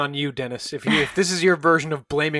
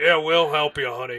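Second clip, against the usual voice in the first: put-on drunken, mocking, jeering voice. Retelling a drunk man's mocking reply to cries for help: imitating a drunken mocking reply. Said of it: "a man's very drunken voice respond mockingly".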